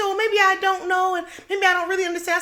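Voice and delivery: mocking offended woman voice, high, flustered, rattled off.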